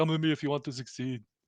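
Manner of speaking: robotic movie voice. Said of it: "in the Terminator voice".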